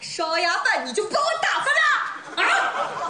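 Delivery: angry, high, drawn-out, slow crying whine.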